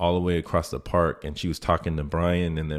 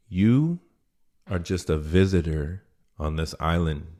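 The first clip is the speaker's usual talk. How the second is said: very stern, severe, firm delivery. Retelling what the judge said in court: imitating a stern judge. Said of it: "the judge tells me very sternly".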